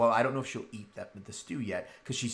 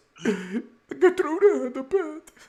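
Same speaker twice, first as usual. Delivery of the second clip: very high-pitched, very slow, drawn-out sobbing wail; 9 dB louder than usual. A game narrator voices a character who starts to cry again, crying. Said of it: "And then she starts to cry again".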